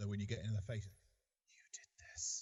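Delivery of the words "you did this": spooky, eerie tone, quieter. Showing another player how to threaten up close: spooky, wide-eyed delivery. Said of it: "that is spooky".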